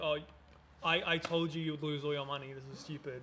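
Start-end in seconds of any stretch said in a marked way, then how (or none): none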